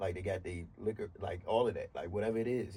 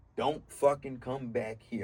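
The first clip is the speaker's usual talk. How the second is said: put-on yell, higher and louder; 4 semitones higher, 5 dB louder than usual. Retelling an uncle yelling at grandmother in the hospital: imitating uncle yelling. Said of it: "My uncle was yelling at her".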